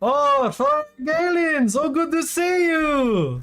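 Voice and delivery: shouted at full volume. Narrating a game, voicing a character greeting another character, very loud greeting. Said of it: "Very loud".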